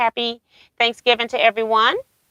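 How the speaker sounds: normal talking voice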